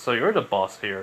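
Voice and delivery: ordinary delivery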